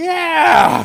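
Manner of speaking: very loud, very high, drawn-out howl of pain. Retelling a hammer injury, answering the foreman: imitating his own scream. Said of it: "And I screamed at him".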